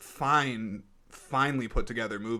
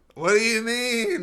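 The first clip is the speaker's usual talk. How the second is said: shrill, eerie, raised, spooky ghost wail; 11 semitones higher, 7 dB louder than usual. Playing a ghost asked why he looks mangled, answering in a ghost voice. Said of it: "That's my ghost voice".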